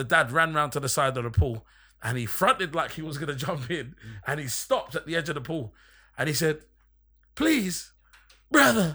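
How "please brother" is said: whiny, beggy, high, loud pleading. Retelling what a dad said at the pool edge, imitating someone begging. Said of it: "the way he said it was so beggy".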